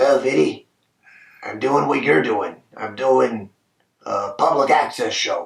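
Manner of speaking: hoarse, raspy tough-guy tone. Retelling a gangster-movie actor's answer about what he does now, imitating his raspy voice. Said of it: "he says in his raspy voice".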